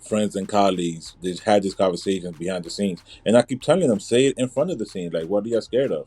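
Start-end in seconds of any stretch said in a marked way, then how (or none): none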